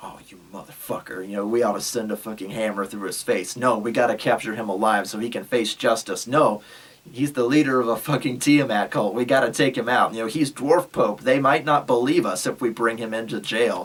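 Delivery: plain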